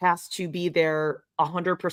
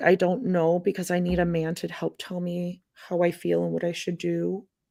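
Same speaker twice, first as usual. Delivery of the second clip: timid, meek tone. Showing how some women talk to come across to men, meek voice. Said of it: "coming across as, like, kind of meek".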